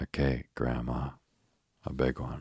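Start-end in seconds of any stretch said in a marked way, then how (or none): none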